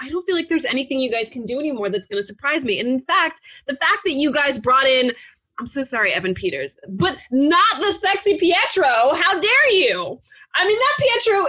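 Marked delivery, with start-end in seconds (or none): 6.9-11.5 all-out, high-pitched, swooping yell. Speaker reacts to a casting choice, yelling. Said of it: "I'm yelling".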